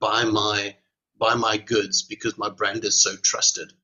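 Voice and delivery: normal talking voice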